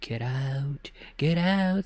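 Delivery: very slow, playful, cartoonish spooky ghost voice. Describing a spooky voice they hear, speaker demos a Scooby-Doo ghost voice. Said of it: "kind of like a playful um, ghost voice".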